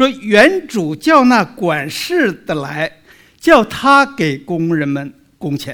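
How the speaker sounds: slow, weighty stress on the word "steward".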